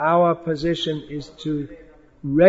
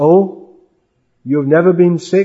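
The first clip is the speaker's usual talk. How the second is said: loud, raised voice of mock incredulity. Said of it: "in mock incredulity".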